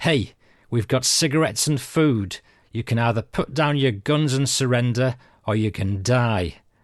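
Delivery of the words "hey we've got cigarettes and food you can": plain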